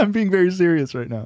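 talking through giggles. Insisting to the others on being serious, laughing while talking. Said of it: "You're literally laughing".

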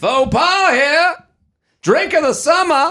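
put-on Boston accent. Joking about a beach vendor hawking drinks, calling out in a boston accent. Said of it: "I only think of them in Boston accents".

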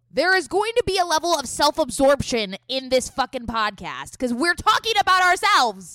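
loud. One podcast host argues a point to the other, getting loud. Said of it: "you got really loud there".

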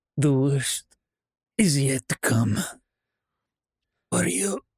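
faint, weak, barely audible whisper. The narrator voices a fallen fighter looking up at the captain; faint whisper. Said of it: "he just kind of faintly whispers out".

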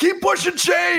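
very high-pitched, screaming strength-coach-style yell. Retelling an assistant strength coach yelling during a workout: imitating a coach screaming. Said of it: "assistant strength coach screaming at him".

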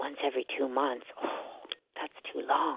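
muttered under breath. Retelling their own reaction while listening to a plan, muttering under breath. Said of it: "talking under my breath".

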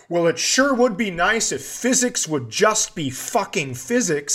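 put-on, mild, half-yelled ranting. Retelling a paddling trip, quoting a companion: imitating someone yelling. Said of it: "she's yelling at physics".

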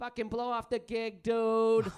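slow, deliberate, dragged-out delivery. Retelling what the other speaker said on the phone: imitating the other speaker. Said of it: "I just hear you going".

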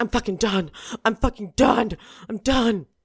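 high, fuming, fed-up, seething outburst. Retelling a reality star storming off the set: imitating someone seething.

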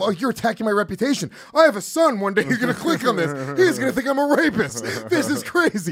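emotional upset outburst. Retelling own replies while arguing online: retelling own emotional outburst. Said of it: "Whereas I'm really emotional. I'm going".

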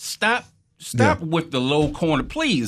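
fed-up, exasperated, screaming tone. Recalling watching the Nats game, the speaker is retelling a scream at the TV. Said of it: "I was screaming at the TV".

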